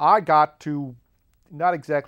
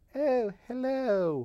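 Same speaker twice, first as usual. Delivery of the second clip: light, vague put-on Canadian accent, pitched up; 8 semitones higher, 7 dB quieter than usual. Speaker quotes a nice Canadian lady's reply, in a vague Canadian accent. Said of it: "talked with the the vague Canadian accent".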